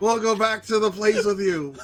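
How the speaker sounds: yelling as loud as possible. Calling after someone far away, in character: yelling as loud as possible. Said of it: "I'll yell as loud as I can".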